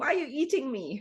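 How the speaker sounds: high, loud yelling voice. Talking about eating food, the speaker voices the spinach: yelling as the spinach. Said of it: "I'm yelling".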